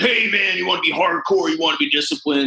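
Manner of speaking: jokey tough-guy voice. Recalling a video made pretending to be a Navy SEAL: funny Navy SEAL voice. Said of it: "I had this funny voice and I was like".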